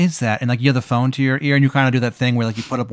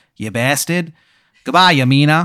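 really bad, terrible put-on Boston accent; 3 semitones higher, 3 dB louder than usual. Speaker acts out the Wizard of New England's parting words to the listener, in terrible Boston accent. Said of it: "He's got like a terrible Boston accent".

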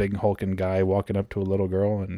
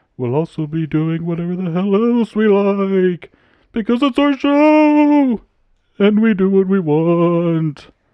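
put-on spooky old-fashioned voice, higher and louder; 12 semitones higher, 11 dB louder than usual. Opening the podcast episode as a scary movie narrator: old-timey spooky voice. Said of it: "old-timey spooky".

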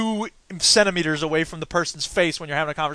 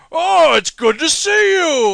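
mock over-the-top voice acting, much higher, louder; 11 semitones higher, 7 dB louder than usual. Speaker mocks a game's voice acting, imitating over-the-top voice acting. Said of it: "the voice acting was like".

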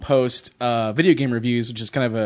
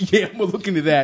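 put-on thirteen-year-old city kid voice, pitched up; 6 semitones higher than usual. Acting out a reply to someone reporting what they saw, as a 13-year-old inner-city kid. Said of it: "that's an impression of a 13-year-old inner-city youth".

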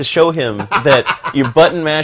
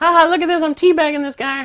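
put-on very high pre-puberty gamer kid voice. Mocking how teabagging online gamers sound, imitating a prepubescent kid gamer. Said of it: "some 12-year-old kid that hasn't hit puberty yet".

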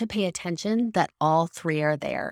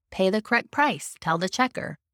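usual speaking voice

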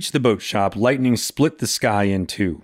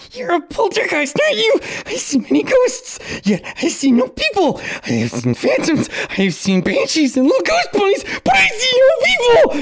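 very high, frantic, shrill, swooping panicked shouting. Narrator reads the man's reply to Watcher, panicked shouting. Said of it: "A man with such tight skin you could easily see his bones cradled behind it, rocking slightly with a thumb in his mouth".

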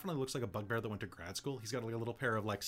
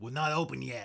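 put-on goblin voice; 4 dB louder than usual. The DM voicing the goblin boss answering the players: Chucklehead goblin voice. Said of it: "The toffee head says".

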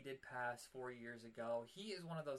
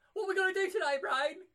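very high, loud, bouncy cartoon voice; 16 dB louder than usual. Showing which cartoon voices he can do, doing the Pinky voice. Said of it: "I could do Pinky pretty well".

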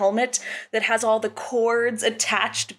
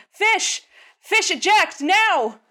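very high, stretched-out, drawn-out shout; 10 semitones higher, 4 dB louder than usual. Voicing a character yelling for someone to eject: yelling out. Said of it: "Alice yells out".

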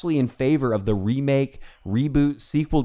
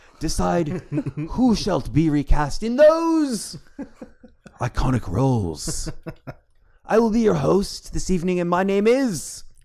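stagey, theatrical Shakespearean declaiming; 4 semitones higher than usual. A host opens the evening's show in a mock-Shakespearean tone. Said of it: "I'm dropping the Shakespearean tone".

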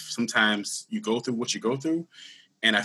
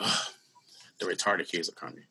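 put-on mutter under breath, much quieter, lower; 4 semitones lower, 7 dB quieter than usual. Retelling what a teacher said as the speaker came in late, imitating her mumble. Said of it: "She mumbles under her breath, real low".

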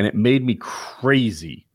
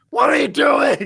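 very high, shrill, put-on yell in raised voice; 4 dB louder than usual. Recounting an argument with her over a credit card bill, re-enacting own yell. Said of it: "But I yelled at her like".

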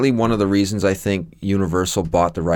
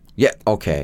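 normal talking voice

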